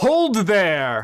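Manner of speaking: big, resonant booming delivery. Game narrator voicing a voice that booms out to the players. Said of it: "a voice booms out".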